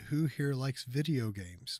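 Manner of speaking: ordinary talk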